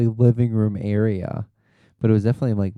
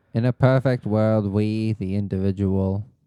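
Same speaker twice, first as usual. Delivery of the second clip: usual speaking voice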